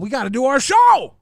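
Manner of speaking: yelling out loudly. Answering another speaker about their show, yelling. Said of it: "Don't yell at me".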